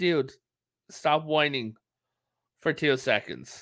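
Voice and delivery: ordinary talk, nothing marked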